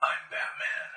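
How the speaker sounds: whispered. Voicing a figure behind the players in a bat room: whisper. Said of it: "all of a sudden you hear a whisper behind you".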